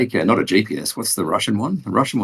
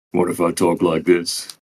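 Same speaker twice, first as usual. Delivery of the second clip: put-on deeper voice with bass. Answering a request to put more bass in the voice: put-on deeper voice with bass. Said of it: "Put some bass in your fucking voice".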